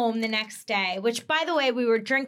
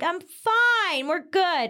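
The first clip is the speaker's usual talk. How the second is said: put-on slurred drunk speech, pitched higher; 6 semitones higher than usual. Retelling answering a phone call while driving to the airport: imitating drunk slurring.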